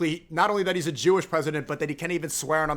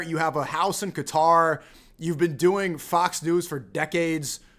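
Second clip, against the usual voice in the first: usual speaking voice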